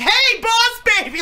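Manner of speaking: play-acted shrill, very high, loud teasing call. A parent recalls her son calling out to a man: retelling a loud shout.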